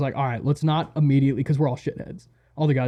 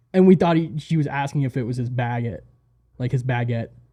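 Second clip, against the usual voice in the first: plain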